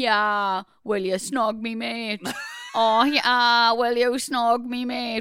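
slow put-on Geordie accent, young man's voice. Reminiscing about people from when they were younger, in a Geordie lad accent. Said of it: "just hearing you do that Geordie lad voice".

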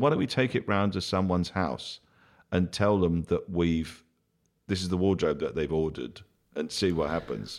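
ordinary talk, nothing marked

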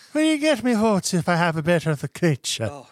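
put-on terrible high Irish accent. Impersonating the politician Honest John asking for votes, with an Irish accent. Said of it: "a better impersonation of an Irish person".

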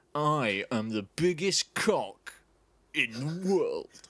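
very slow, deliberate, word-by-word delivery. Taking a turn at impressions: Jeremy Clarkson impression. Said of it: "Jeremy Clarkson".

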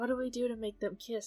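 hushed whisper. During a role-playing game, a player asks the group something, whispering. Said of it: "I'm whispering to the group".

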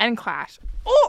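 loud burst of thrilled, excited yelling. Suddenly remembering a favorite band while listing topics: excited yell. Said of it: "that was a yell of excitement".

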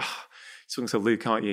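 playful, light joking tease. Retelling the wife's remark during phone calls: imitating wife, joking tone. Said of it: "in a very joking way".

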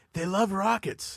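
high, slow, puzzled impression voice. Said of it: "he's like".

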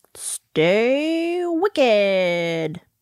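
announcer-style voice. Signing off the episode with the closing line: announcer voice. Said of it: "like I'm, like, an announcer".

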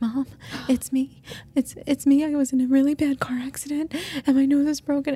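mock hysterical crying, very high pitched. Retelling a scam call from a caller claiming to be her son: imitating hysterical crying. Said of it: "And he's hysterical crying".

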